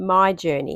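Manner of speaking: stress on my. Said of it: "and I stress the word my".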